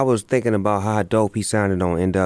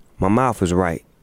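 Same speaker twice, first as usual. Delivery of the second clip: ordinary talk, nothing marked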